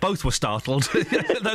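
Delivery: amused, laughing delivery.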